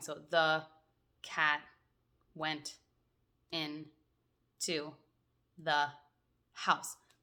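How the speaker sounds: choppy, halting staccato reading, word by word. Speaker demonstrates a reader struggling to sound out words, in a choppy staccato reading. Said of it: "reading it in a really staccato way".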